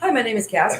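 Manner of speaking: play-acted sick, ailing voice. Imitating how a sick speaker would do an interview: imitating someone sick. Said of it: "she's gonna be doing the interview like this".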